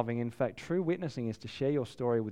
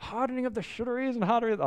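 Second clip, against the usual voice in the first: put-on English accent, much higher, faster; 11 semitones higher than usual. Quoting a man's memorable line: put-on English accent. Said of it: "he had this English accent".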